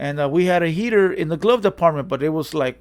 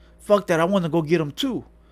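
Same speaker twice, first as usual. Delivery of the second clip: mock pumped-up, excited outburst. Retelling a homie wanting to go along: imitating someone pumped up. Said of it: "he was all pumped up".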